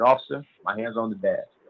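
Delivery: speaking very low. Retelling a police stop, answering the screaming officer: imitating own quiet voice. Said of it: "I'm talking as low as I can".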